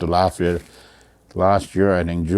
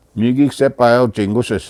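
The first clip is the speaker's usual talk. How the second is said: normal talking voice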